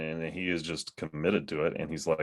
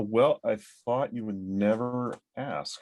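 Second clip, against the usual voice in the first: dry, sarcastic, pitched-up aside; 5 semitones higher than usual. Answering a question about what they are currently reading: sarcastic. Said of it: "I'm being sarcastic".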